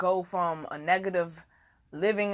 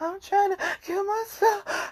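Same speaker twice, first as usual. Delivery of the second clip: put-on very high, tearful blubbering, sobbing voice; 14 semitones higher than usual. Retelling a call to a crisis hotline, imitating own past sobbing.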